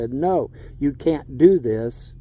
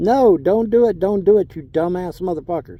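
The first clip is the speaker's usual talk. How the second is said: reenacted screaming and yelling, louder; 4 semitones higher, 4 dB louder than usual. Recalling what they screamed back then about the mosque, retelling own screaming. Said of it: "sitting there screaming at them".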